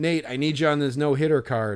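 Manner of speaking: desperate, yelled, pleading tone. Retelling calling out to a player walking past: retelling a desperate yell. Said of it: "out of desperation yelled".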